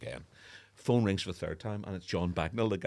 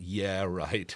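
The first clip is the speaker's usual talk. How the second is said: imitated Belfast way of speaking. Retelling answering a phone call he thought was a prank: imitating own past Belfast way. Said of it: "in that kind of Belfast way".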